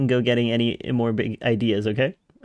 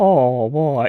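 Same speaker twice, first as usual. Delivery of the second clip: mock-sad tone, louder; 2 semitones higher, 6 dB louder than usual. Speaker imitates how he said it in the game, mock-sad tone. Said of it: "He sounded so sad".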